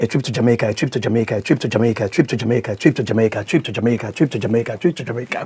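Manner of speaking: fast tongue twister. Taking another try at a tongue twister challenge: fast tongue twister. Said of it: "Try again".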